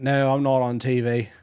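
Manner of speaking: very slow put-on Australian drawl. Retelling what a stranger at a game replied: imitating an australian accent. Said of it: "he had, like, an Australian accent".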